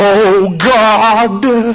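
holy-sounding put-on prayer voice, solemn, God drawn out. Mocking people who can only pray in their special prayer voice: put-on prayer voice. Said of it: "they can never pray unless they have their prayer voice".

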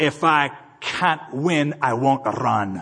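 very slow, deliberate, drawn-out Scottish brogue. Telling a story about a man who lost a race, the speaker quotes him: Scottish brogue. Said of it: "in that Scottish brogue".

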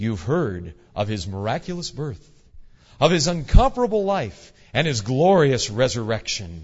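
slick, smooth, polished professional TV announcer voiceover. Describing a slick TV ad, voicing its announcer: very professional announcer voice. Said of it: "A very professional sounding announcer's voice".

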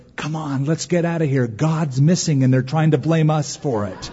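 put-on whispering boy voice. Retelling a joke where the older brother speaks to the younger: imitating a boy whispering. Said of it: "the older brother whispers".

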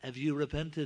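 put-on thick English accent. Retelling a man asking a woman a question, thick English accent. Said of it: "he said in his thick English accent".

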